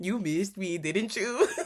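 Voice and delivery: put-on flirtatious teasing. Speaker retells a scene where one man teases another, mock-flirtatious teasing. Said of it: "the way he said it was just so flirtatious".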